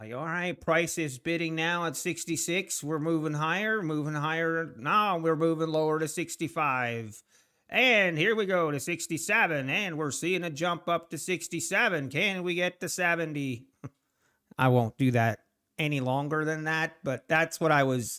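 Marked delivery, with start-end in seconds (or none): 0.1-13.6 running, rapid patter like an auction caller. Showing how he wants someone to call out price moves, in an auctioneer voice. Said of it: "do it like an auctioneer".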